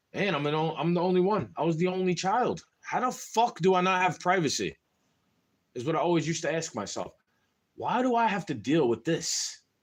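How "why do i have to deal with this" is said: mock calm tone with underlying anger. Retelling a question to their mom: imitating a calm but angry tone. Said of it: "I used to say it very calmly".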